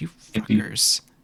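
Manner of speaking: upset, sighing grumble, barely audible, under the breath. Voicing a character who sighs and mutters at the party: upset, barely audible mutter. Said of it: "you can tell that she's just upset at you guys".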